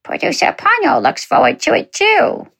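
squeaky, very high pet-dog voice. A podcast host thanks supporters, then speaks for their dog, Ponyo's dog voice. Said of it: "That's just my dog's speaking voice".

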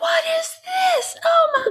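put-on very high, slow, amazed kids' shout. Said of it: "They're like".

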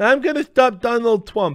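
very high-pitched, put-on deaf-sounding voice. Retell what she said before you noticed she was deaf, imitating a deaf voice. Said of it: "do you see the deaf voice?".

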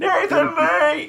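loud, crazy, high, drawn-out yell.

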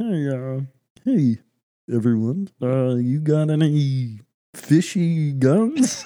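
comic frog character voice. Joking with others after someone asks if it is Kermit, in a Kermit the Frog voice. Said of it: "It's pretty good".

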